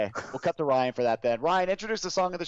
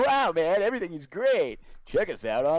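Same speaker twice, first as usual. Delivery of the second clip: cartoony retro nineties kids-show style voice; 2 semitones higher than usual. Mocking how Ryan did the legal part: imitating Ryan's nineties cartoon voice. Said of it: "tries to make it sound like, almost like a nineties cartoon".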